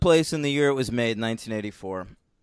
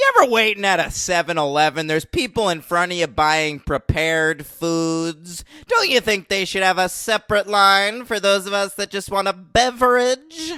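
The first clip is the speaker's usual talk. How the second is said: put-on grumpy commentator voice, pitched higher; 4 semitones higher than usual. Answering with another rant in an Andy Rooney voice. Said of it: "That's a classic Rooney".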